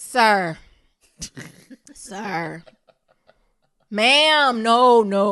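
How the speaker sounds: sir and ma'am dragged very slowly, sounding upset. Showing how being upset comes through polite words: upset tone on sir and ma'am. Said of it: "You could just tell by the way I say ma'am and sir how upset I am".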